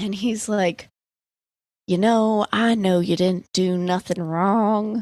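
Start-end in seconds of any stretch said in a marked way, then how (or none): 2.5-5.0 put-on Southern accent, dad voice. Retelling how a man played good cop with her: imitating a southern dad. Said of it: "Like really weird southern dad vibe".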